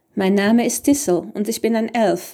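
ordinary delivery

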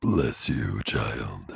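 very deep, low demonic voice. Trying out options for a demon voice, the speaker does the deep demon voice. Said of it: "I want to do my deep one".

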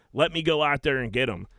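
plain

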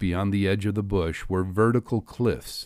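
ordinary delivery, nothing marked

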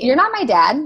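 put-on sassy, cheeky tone with attitude. Retelling a reply to a partner who called her out: imitating own sassy retort. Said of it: "we're very sassy".

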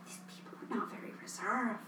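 soft, hushed, unvoiced whisper. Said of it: "I'm just like".

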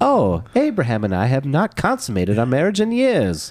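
put-on, laid-on Southern accent. Co-host asks if this is the Sarah voice; answer in Sarah voice. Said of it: "Would that be your Sarah voice?".

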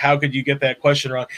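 plain

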